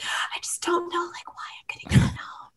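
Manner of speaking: very quiet, soft, breathy whispered words. Retelling what a contestant said when sent home: imitating Marilyn whispering. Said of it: "she was, like, whispering".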